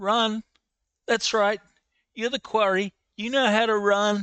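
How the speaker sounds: high, loud yelling. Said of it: "he yells that out".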